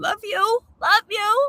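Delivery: very high-pitched, sarcastic, offhand delivery. Showing how the word love gets used in everyday talk: sarcastic. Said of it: "I use the word sarcastically".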